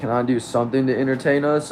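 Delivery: plain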